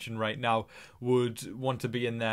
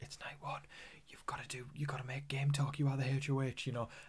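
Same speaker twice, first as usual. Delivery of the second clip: hushed, whispered muttering; 8 dB quieter than usual. Recounting a man talking to himself alone in a room, retelling a whisper. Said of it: "I don't know why I'm whispering".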